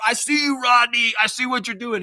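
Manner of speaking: play-acted, very high, accusing call-out yell. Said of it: "where I yelled at".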